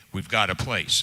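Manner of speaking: normal talking voice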